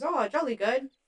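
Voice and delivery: bad, weak, unconvincing put-on English accent. Retelling a man's reply to Dennis Quaid agreeing to run his data, in a bad English accent impression. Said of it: "That was my English impression".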